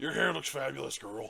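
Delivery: silly, rasping, creaky creature voice. Joking around about a scary scene, giving a creature a funny creature voice. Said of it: "we gave the creatures funny voices".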